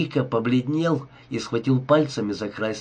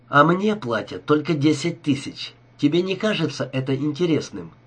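ordinary delivery

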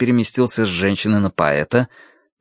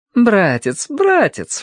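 very high, playful, laughing exclamation; 12 semitones higher than usual. Qian laughs, claps, and calls out to her brother, exclaiming. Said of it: "воскликнула она".

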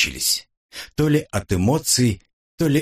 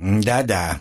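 displeased, sulky, grudging. Narrator voicing a girl answering the narrator, displeased and sulky. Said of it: "недовольно насупилась девушка".

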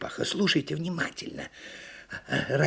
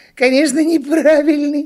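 laughing, much louder; 11 semitones higher, 12 dB louder than usual. Narrator reads a story character's reply to the turtle, laughing. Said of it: "рассмеялась Почешись".

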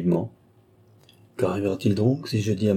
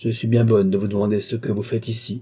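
ordinary delivery, nothing marked

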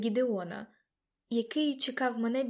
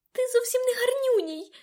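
squeaky, shrill, very high cry; 13 semitones higher, 5 dB louder than usual. Narrator confronting a rat beside a puddle, squeaking. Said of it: "пискнула я".

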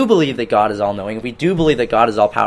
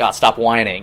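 normal talking voice

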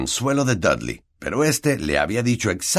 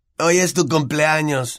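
sarcastic, mocking, pitched-up taunting tone; 7 semitones higher than usual. Dudley walks straight up to Harry and taunts him, mocking. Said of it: "dijo con sorna".

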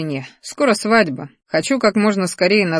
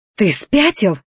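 gasping for breath, choking on air; 2 semitones higher than usual. Magiana reacts to a man pressing close to her, gasping for breath. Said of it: "захлебнулась воздухом Магиана".

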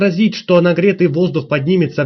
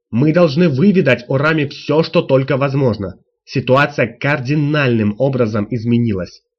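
plain reading voice

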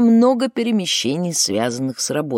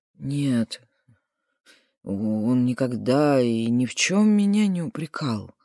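shaken, stunned, hesitant, lower and slower; 4 semitones lower, 3 dB quieter than usual. Asked whether someone ever reproached him, a man answers after a pause: shaken, hesitant answer. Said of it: "Потрясенный, избитый с толку, Жубер ответил не сразу".

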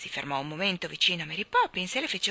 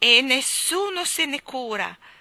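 bitter, self-pitying, raised and drawn-out; 7 semitones higher, 7 dB louder than usual. Narrator reading a character's added remark after a toothache, said bitterly. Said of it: "aggiunse amaramente".

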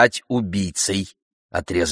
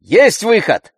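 very high, sharp, loud shouting cry; 12 semitones higher, 5 dB louder than usual. Andrei breaks into the narrator's talk with her mother, shouted. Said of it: "крикнул Андрей".

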